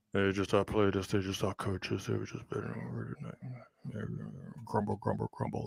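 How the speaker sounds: very quiet, barely audible, under-the-breath delivery. Reading a coach's press conference quote in his voice: Bill Belichick impression. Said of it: "That's my Bill Belichick impression".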